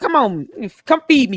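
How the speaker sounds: attitude-filled pooch voice. Imagining a prank where a dog arrives for a date: sassy dog voice. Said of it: "one of them sassy dogs that looks at him up and down and barks".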